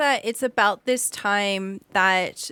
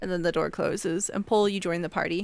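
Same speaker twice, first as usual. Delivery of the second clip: ordinary delivery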